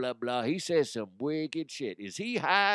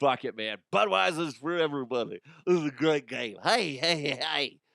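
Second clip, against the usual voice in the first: spaced-out, loose, stoned commentator-style rambling. Mocking a game commentator who sounds high: imitating Tony Romo sounding high. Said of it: "He sounds like he's either high".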